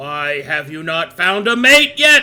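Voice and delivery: booming, very loud yell, rising in pitch. Voicing a bird yelling in a player's mind: yelling in character. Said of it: "Cup will yell in your mind".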